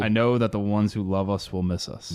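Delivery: ordinary delivery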